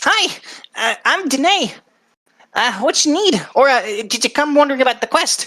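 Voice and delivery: high, small little goblin lady voice. Voicing the goblin lady answering an adventurer's greeting: Danae goblin lady voice. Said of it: "She is a little goblin lady".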